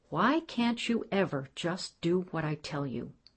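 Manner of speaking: plain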